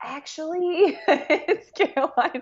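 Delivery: high-pitched, laughing, awkward delivery.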